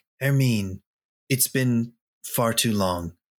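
gentle, tender, affectionate tone. Suggesting a player character's line in a role-play scene, tender voice. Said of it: "in a tender voice".

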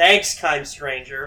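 put-on strong sarcasm. Shopper retelling what they say when strangers grab wanted Funkos, acting out heavy sarcasm. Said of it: "I really sarcastically go".

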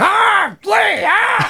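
very high-pitched cartoon parrot squawk. Showing what the parrot from Aladdin would sound like: Gilbert Gottfried voice. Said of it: "Gilbert Gottfried".

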